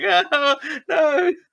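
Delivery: play-acted, very high, crying, bawling wail. Retelling losing an arcade boxing game to a teenager: imitating own past bawling. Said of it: "bawling, going".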